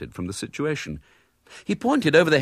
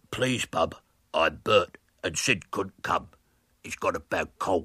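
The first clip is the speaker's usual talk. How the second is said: deep, throaty voice, dropped low; 7 semitones lower than usual. At the front door, William speaks to Miss Milton in a deep, throaty voice. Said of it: "began William in a deep, throaty voice".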